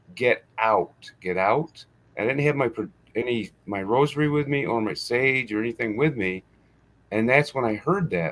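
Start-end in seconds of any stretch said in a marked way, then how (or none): 0.2-1.9 mock very strong furious voice, slow and forceful. Retelling what an angry woman's voice said at a graveyard: imitating a very strong angry voice. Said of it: "she told me in a very strong voice".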